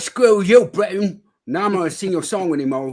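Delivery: put-on loud Cockney accent. Joking about breaking away from Britain, speaker talks in a sort-of Cockney accent. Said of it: "You're kind of doing a Cockney accent there".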